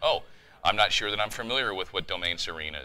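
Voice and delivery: ordinary talk, nothing marked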